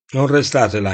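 ordinary delivery, nothing marked

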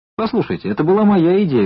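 high, indignant, objecting tone. The porter Norm cuts into the other men's argument, indignant. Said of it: "возмутился носильщик Норм".

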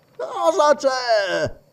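groggy, hoarse, raspy, drowsy voice. Answering a light knock at the door from inside the room: raspy sleepy voice. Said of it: "una voce roca e addormentata".

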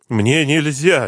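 frightened, hasty, scared voice. After a man orders him to come along, the sleepwalker replies, frightened. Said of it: "испугался лунатик".

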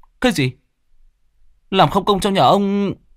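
very high-pitched group yell in unison. A group shouts back at lão Chánh together, shouting in unison. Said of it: "Chúng đồng thanh hét lên".

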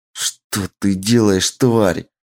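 words pushed out as a hiss. Narrator reads a woman's line to the creature altering her armor, hissing. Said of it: "прошипела та".

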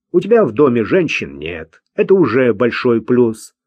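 ordinary talk

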